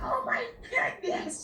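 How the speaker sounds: squeaky, way-up-high, very high-pitched voice. Describing a past video, the speaker redoes an exclamation in a very high-pitched voice. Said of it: "in a very high pitched voice".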